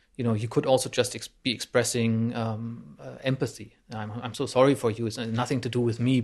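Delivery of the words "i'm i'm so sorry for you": ordinary delivery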